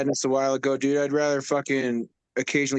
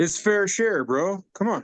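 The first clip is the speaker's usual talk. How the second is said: mock-sincere, sarcastic, pitched-up delivery; 6 semitones higher than usual. Answering what the grower got, sarcastic. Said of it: "Being sarcastic".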